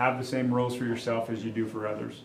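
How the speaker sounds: usual speaking voice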